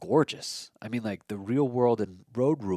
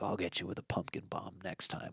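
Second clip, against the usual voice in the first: breathy, whispered, menacing villain voice; 3 semitones lower, 11 dB quieter than usual. Describing how cartoon villains promise to return: Green Goblin voice. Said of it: "the Green Goblin, he's like".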